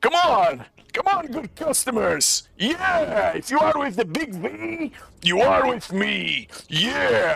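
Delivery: welcoming casino boss, pitched high. Voicing a casino owner greeting four new customers: Arkan character voice. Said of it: "he turns to you and he turns and he sees all four of you and he says".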